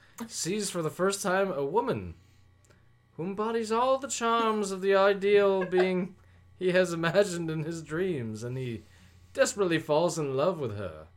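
put-on posh British accent. Reading program notes aloud as asked: put-on posh british accent.

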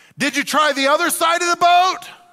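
very high, loud hollered call-out. A speaker retells Jesus calling out to the disciples, imitating Jesus hollering. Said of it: "He hollers and says".

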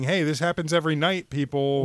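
ordinary talk

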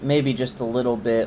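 mock muttering under breath. Retelling a woman's reply to a man during filming, muttered under her breath. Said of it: "like under her breath".

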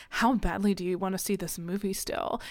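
put-on quiet whisper. Retelling a woman quietly whispering to one of the boys, imitating someone whispering. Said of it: "she like quietly whispers to Bo".

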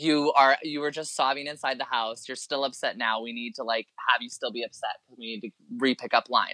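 usual speaking voice

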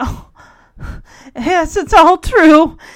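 trembling, quavering voice. Retelling a scene where a character confirms her story: imitating a quivering voice. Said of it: "just voice quivering".

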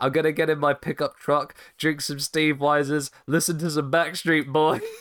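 offhand, throwaway wrestler voice. Retelling a wrestler's joke line in his Steve Austin impression. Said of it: "when he does his Steve Austin impression".

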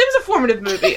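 fast speech broken by laughter.

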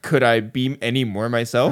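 ordinary talk

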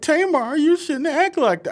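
very high-pitched, overly tender voice. Retelling how he spoke to Tamar, imitating a man's voice getting high pitched. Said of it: "how his voice would get high pitched".

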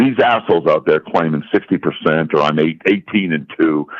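normal talking voice

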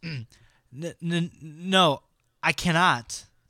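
high, halting, stammering, stuttered delivery. Narrator reading a story voices the priest's refusal: stammering. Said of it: "stammered Father Adam".

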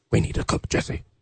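put-on dramatic villain voice. Quoting a Breaking Bad line about Jesse: Breaking Bad character impression. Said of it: "It's a pretty good impression".

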